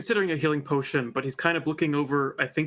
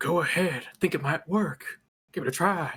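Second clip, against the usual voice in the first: hushed, whispered delivery. Playing a character who whispers back to someone: whispering. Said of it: "he whispers back".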